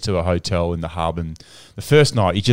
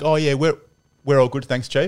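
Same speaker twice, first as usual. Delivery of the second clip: put-on snarky, dismissive, negative, sarcastic voice, pitched up; 8 semitones higher than usual. Quoting a man's narky reply to him: imitating a sarcastic manner. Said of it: "it was that sarcastic manner".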